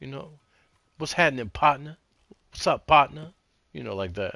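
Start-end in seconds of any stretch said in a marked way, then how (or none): 1.0-3.3 very loud, high-pitched, slangy street voice. Explaining what "partner" means, showing the slangy city way of saying partner. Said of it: "slangish kind of a way".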